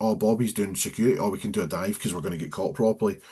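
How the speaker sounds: ordinary delivery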